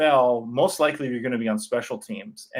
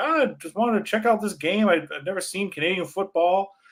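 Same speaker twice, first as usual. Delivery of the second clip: put-on Southern US drawl, pitched up; 6 semitones higher than usual. Retelling what a movie crew member said to the speaker's dad at a football game, imitating a Southern drawl. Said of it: "with a Southern drawl. He's like".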